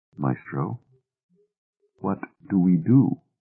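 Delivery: soft, hushed delivery. A second man asks the trader, whom he calls maestro, softly. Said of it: "the second said softly".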